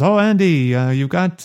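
put-on Irish accent. Retelling what a bartender said at a gig: Irish accent. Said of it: "this is your Irish accent".

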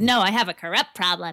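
ordinary talk

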